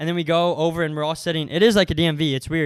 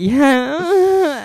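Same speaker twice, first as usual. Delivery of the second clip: very high, strung-out, drawn-out creepy drawl; 10 semitones higher, 7 dB louder than usual. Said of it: "He was literally like".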